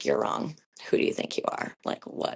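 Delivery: low, whispered, doubting inner voice.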